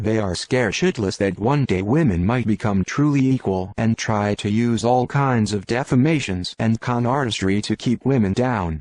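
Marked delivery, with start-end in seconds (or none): none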